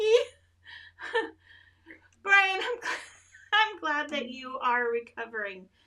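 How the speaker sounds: high voice, speech broken by hard laughter. Greeting brian, who is recovering, while laughing hard while talking. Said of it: "I am so sorry I'm laughing so hard".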